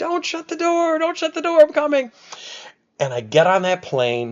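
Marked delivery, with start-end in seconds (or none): 0.0-2.1 put-on very high, desperate screaming call. Retelling racing to an airport gate as the door shut, retelling a scream. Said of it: "And I'm screaming".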